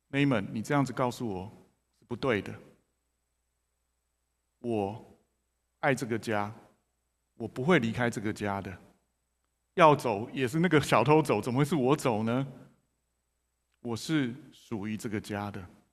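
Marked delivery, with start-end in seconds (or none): none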